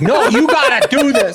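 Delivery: put-on, very high, slow, loud, dragged-out screaming. Retelling how Tony Khan screamed at MJF: imitating Tony Khan screaming. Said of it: "He's screaming at him while he's hugging him".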